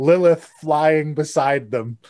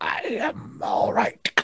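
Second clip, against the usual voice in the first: odd whispered character voice; 9 semitones higher, 7 dB quieter than usual. Voicing the little mount answering after being poked, in Handy's odd voice. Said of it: "Do you normally talk like that?".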